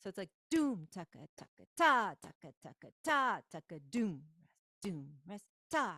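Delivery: doom and ta loud, taka takas soft. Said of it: "you really wanna keep accenting the main rhythm".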